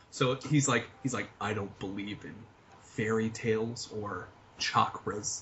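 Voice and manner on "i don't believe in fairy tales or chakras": put-on slow, low, bland neutral accent, every word enunciated. Imitating a man who enunciates to avoid British mode, very slow and careful. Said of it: "he speaks very slowly and very carefully because he has to enunciate".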